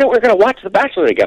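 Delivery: mock fuming woman's voice. Retelling his wife fuming when he walked in, imitating his angry wife. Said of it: "can you imitate your angry wife again".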